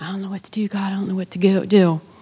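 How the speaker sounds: put-on muttering under breath. Retelling panicking in a loud food court: retelling muttering under breath. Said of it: "under my breath going".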